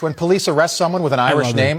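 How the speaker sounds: ordinary delivery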